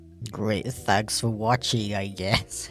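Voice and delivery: sarcastic-sounding voice. Thanking viewers for watching: sarcastic-sounding voice. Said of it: "the voice I put on when I said that was kinda similar to my sarcasm voice".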